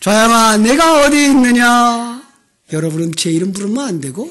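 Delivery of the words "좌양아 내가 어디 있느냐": very loud, high put-on divine voice. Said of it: "우리 한번 불러볼까요?".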